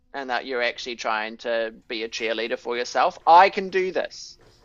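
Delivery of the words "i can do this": deliberately slow, resolute, determined conviction. Showing a learner how to say the line like a cheerleader: said with determination. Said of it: "With determination".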